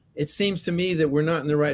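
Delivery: ordinary talk, nothing marked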